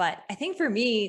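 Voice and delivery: normal talking voice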